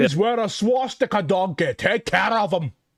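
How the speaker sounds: loud, high, botched fake Scottish accent. Going briefly off topic, the speaker adds a line in a horrible Scottish accent. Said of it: "I know that was a horrible Scottish accent".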